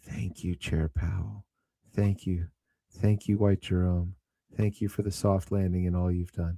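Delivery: quiet, low, hushed half-whisper. Acting out what another man half-whispers to himself every night: acting out a quiet half-whisper. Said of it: "he he whispers quietly to himself".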